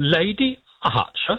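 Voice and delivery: mocking, slow, high-pitched put-on voice.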